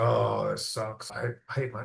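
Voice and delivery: unhappy, low, quiet tone. Teaching phone protocol, the speaker demonstrates answering without a smile, unhappy unsmiling tone. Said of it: "the difference is your tonality".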